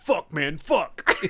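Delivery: put-on generic American accent. Quoting a character's failed Robert De Niro impression: generic American accent. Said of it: "all he says in his De Niro impression is".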